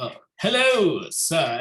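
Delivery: mocking, sarcastic delivery. Greeting an old battle partner in character while bowing: mocking greeting. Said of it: "mockingly bows".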